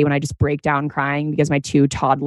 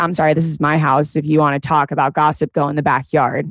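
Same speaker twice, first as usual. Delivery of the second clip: usual speaking voice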